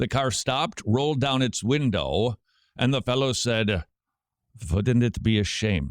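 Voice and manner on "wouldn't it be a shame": imitated Russian accent. Retelling how a driver stopped and spoke through his car window, put-on russian accent. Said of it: "in Romania they have a Russian accent".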